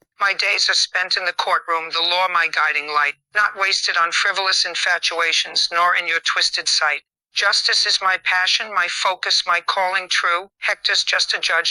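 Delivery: ordinary delivery, nothing marked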